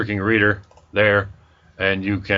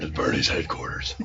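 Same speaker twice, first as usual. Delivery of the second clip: hushed, breathy whispered superhero voice; 7 semitones lower, 8 dB quieter than usual. Teasing a co-host about how he said headquarters, in a Batman voice. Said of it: "He's doing his Batman voice".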